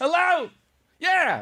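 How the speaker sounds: shouting at full volume. Showing how to answer the phone: full volume shouting. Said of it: "Like that".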